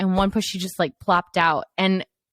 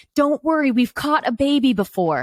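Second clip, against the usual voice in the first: put-on brisk, reassuring yell; 6 semitones higher than usual. Retelling how nurses yelled during a birth: imitating nurses yelling. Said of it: "the nurses are yelling at me".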